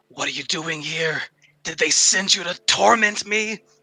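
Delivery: hissed, shouted outburst with rising pitch. Narrator voices Medusa turning toward the group at a pool, hissing and yelling. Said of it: "she hisses and yells out".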